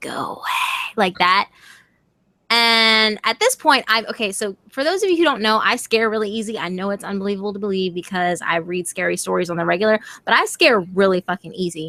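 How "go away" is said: raspy, scratchy, eerie whispered woman's voice. Telling listeners about a woman's voice they heard, repeating it in a scratchy woman's voice. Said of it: "Like in this really kind of scratchy tone".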